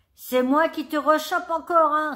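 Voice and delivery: loud, high-pitched, gloating, mocking jeer. Answering someone's cries of pain with a laugh from a bush, mocking. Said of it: "railla Camus".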